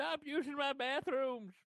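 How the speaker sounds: very high, very slow, drawn-out yell. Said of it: "I'm shouting that out".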